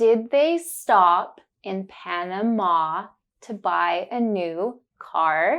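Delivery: slow, careful enunciation, each word spelled out clearly. In a pronunciation drill, the speaker models a sentence for the learner, slow and careful. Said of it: "I will say it slowly and focus on the sound".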